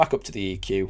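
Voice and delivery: ordinary talk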